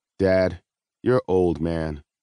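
level, flat, slow deadpan, no pitch lift. A son answers his father's joke: flat. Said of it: "Miles said flatly".

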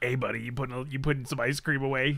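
put-on creepy, creeper-style voice. Joking about someone watching people put away ice cream, creeper voice. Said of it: "Whenever you do the creeper voice".

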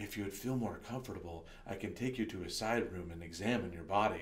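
very low, quiet, hushed half-whisper. Telling a story, the speaker repeats what a man half-whispered in their ear: retelling a half-whisper. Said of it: "he whispers in my ear".

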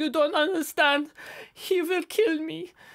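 tearful, weeping delivery, sobbing through the words. Game master voices a delirious woman the players are questioning, sobbing. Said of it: "She is just sobbing".

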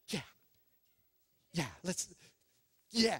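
put-on excited voice. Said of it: "just so excited to be a part".

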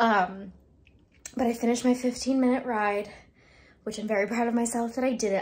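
winded, breathless. Just after finishing a 15-minute bike class, the speaker talks while out of breath. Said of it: "I'm still out of breath".

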